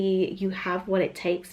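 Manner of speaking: usual speaking voice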